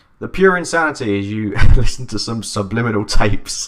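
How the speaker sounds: very loud talk, laughing through the words. Reading something out loud and finding it insane, laughing while talking. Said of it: "I'm laughing because when you read it out loud".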